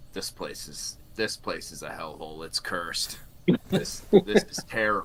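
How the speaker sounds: muttering under the breath. Speaking in character on hearing someone has been here twenty years, muttered under breath. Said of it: "just like under my breath".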